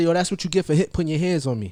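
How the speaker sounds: usual speaking voice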